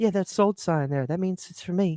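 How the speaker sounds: joking, playful voice. Retelling a shopping video, doing a best impression: Michael impression. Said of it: "I'll do my best impression".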